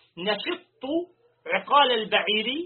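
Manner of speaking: ordinary delivery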